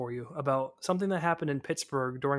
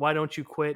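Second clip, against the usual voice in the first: ordinary delivery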